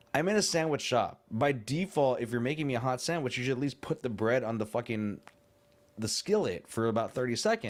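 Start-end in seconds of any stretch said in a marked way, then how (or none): none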